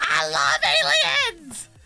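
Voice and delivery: mock top-of-lungs screaming at full volume. Retelling how a stranger leaned out of a speeding truck, retelling a top-of-lungs scream. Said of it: "he screams at the top of his lungs".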